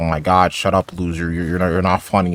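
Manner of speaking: ordinary talk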